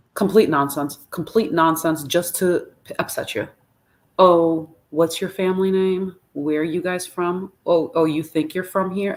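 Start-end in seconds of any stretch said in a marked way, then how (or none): 4.1-9.1 mocking condescending tone, put-on. Retelling questions asked at the checkpoint: imitating a condescending officer. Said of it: "do they have that condescending tone?".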